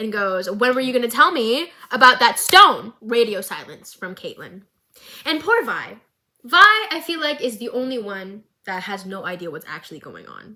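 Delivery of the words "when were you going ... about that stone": sharp, cutting, biting tone. Retelling a couple's fight: imitating Vi biting back. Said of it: "Vi bites back".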